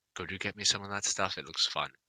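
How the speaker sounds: very quiet, barely audible, urgent whisper. Playing Varric sneaking up to ask for something: Varric whispering. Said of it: "just whisper to him".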